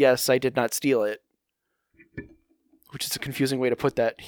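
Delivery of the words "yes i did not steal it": ordinary talk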